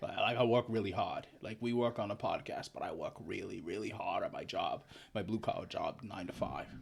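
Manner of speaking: quiet, low-key put-on blue-collar Boston accent. Asked how he would talk, the speaker answers in a Boston accent. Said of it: "Like I'm from Boston".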